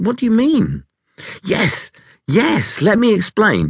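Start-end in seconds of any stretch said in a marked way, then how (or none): 1.4-3.7 eager, excited burst, very high, swooping. A narrator reads a toad explaining his idea to the other animals, excited. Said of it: "Toad stood up in his excitement".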